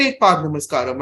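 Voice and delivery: ordinary talk, nothing marked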